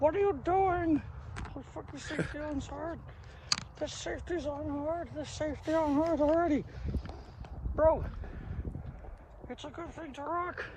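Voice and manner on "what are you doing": high, mocking, fussing old lady voice. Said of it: "They tend to be like".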